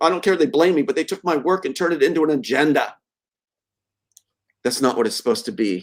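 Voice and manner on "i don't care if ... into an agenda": ordinary talk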